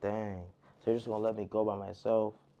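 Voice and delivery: put-on dejected voice. Retelling one guy's reply when the other won't go with him, imitating a sad voice. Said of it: "He looking sad like".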